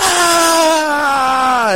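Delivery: high, loud crowd-like roar.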